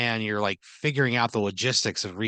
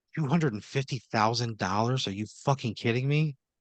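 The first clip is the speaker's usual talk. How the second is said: livid, very angry, fuming outburst; 2 semitones higher than usual. Voicing the wife leaving the courthouse after a verdict: furious. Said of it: "fucking pissed".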